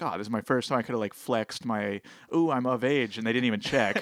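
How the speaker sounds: ordinary talk, nothing marked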